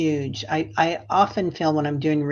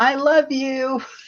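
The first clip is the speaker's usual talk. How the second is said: acted very high, loud shouted yell; 10 semitones higher, 5 dB louder than usual. Retelling calling out to a family in a parking lot: imitating own yell. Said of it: "I yell out".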